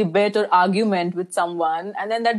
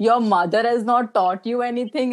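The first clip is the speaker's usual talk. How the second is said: put-on, rising, escalating, angry scolding tone; 3 semitones higher than usual. Retelling how the scolding woman's rebuke escalated: imitating an escalating angry scolding. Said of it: "it went up to".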